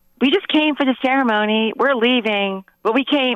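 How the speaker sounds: mock mild holler, sports-crowd style. Retelling how a woman screamed outside after a wedding, imitating her screaming. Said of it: "like just screaming like she's at a football game".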